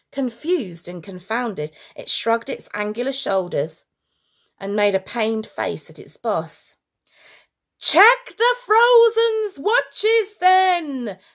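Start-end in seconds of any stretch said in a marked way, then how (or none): 7.8-11.1 shrill, booming, very loud, high-pitched, drawn-out yell. A general gives an order to his underling, yelling. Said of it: "yelled the Worldstopper General".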